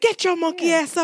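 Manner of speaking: yelling dad voice. Imagining Samuel L. Jackson waking up his kid: Samuel L. Jackson as a screaming dad. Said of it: "He'd be like".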